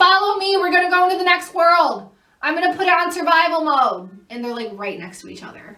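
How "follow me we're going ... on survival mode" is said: put-on very high, shrill children's shouting. Retelling what the kids said while she filmed: imitating kids screaming.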